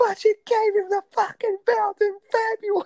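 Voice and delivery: put-on high scream. Retelling Conrad getting mad at another man, imitating Conrad screaming. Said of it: "He's like screaming at him".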